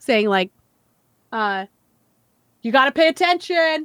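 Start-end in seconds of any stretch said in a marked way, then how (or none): 2.6-3.9 mock yelling, higher pitch. Retelling how a father yelled at his kids from the sidelines: imitating a dad yelling. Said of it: "he was yelling at his kids".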